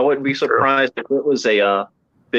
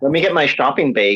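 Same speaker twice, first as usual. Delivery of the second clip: put-on Midwest accent. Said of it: "Midwest accent's terrible".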